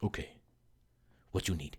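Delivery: put-on thick Vietnamese accent, hushed, very quiet. Quoting a man standing over the speaker's chair, in a thick Vietnamese accent. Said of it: "he had this really thick accent".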